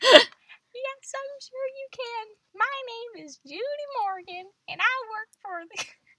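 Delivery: very high, sing-song Southern lilt. Reading a story aloud, voicing the newspaper lady, Judy Morgan's southern accent. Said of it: "She's also Southern?".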